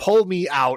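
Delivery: strange mechanical robot voice. Recounting a scene where a woman pulls out a pistol, weird robot voice. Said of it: "in like the kind of like this weird robot voice".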